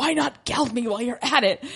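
furious, angry, hissed half-whisper. Retelling a history story, the speaker acts out the king's reply: angry half-whisper. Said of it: "he whispers this, but like, he's very angry".

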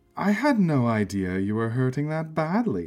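cooing with feigned compassion. At an auction, a woman addresses a rival bidder, cooing with feigned compassion. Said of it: "the woman cooed".

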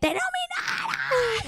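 wild, unhinged, very high, swooping scream. Retelling her mom running into her room with news, retelling mom's scream. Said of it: "like screaming like".

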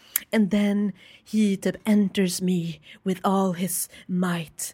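slow, measured audiobook narrator reading voice. Imitating how the audiobook reader sounds reading an erotic scene: imitating audiobook reader's voice. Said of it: "hon har sån röst bara".

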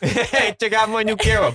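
put-on Brooklyn accent pitched way up high. Joking about how a fantasy race talks: put-on brooklyn accent. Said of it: "Every Alpine Nikokin has a Brooklyn accent".

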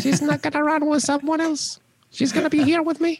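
very high little cartoon mouse voice. Repeating a negative thought to yourself, but in a Mickey Mouse voice. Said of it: "but in a mickey mouse voice".

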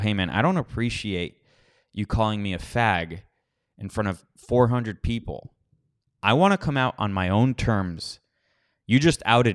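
ordinary talk, nothing marked

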